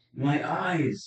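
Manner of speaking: high, loud monster wail of pain. The narrator voices a wounded beholder falling back after a weapon strike, crying out in pain. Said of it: "crying out in pain".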